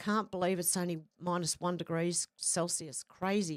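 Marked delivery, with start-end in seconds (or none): none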